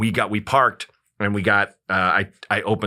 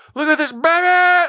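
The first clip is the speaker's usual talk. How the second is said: put-on shrill, very high, excited holler with "baby" drawn out; 6 dB louder than usual. Telling a story about a man who yelled to his friend: imitating Leonard's yell. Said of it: "Like he yelled it".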